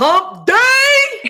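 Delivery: loud, high "hump day". Saying the greeting again after being egged on: said louder. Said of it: "we wanna say it louder?".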